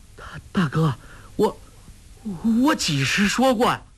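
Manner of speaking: slow, quavering, shaken, trembling voice. Narrating Guo Jing, greatly alarmed, answering his elder brother, in a trembling voice. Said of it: "颤声说".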